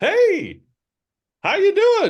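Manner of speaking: very high, sing-song little gnome wizard voice. Voicing a bouncing gnome wizard greeting the party: little gnome wizard voice. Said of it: "it's a little gnome wizard".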